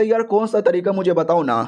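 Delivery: ordinary delivery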